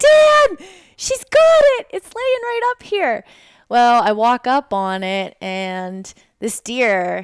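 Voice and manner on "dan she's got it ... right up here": shrill, very high, loud, excited yell. Retelling calling to dan after finding the deer: imitating her own past yell. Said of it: "I'm yelling".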